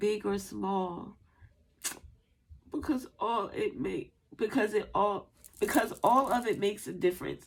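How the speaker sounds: choked-up voice, cracking, near tears. Urging viewers to make a difference, voice breaking, about to cry. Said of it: "I was about to cry".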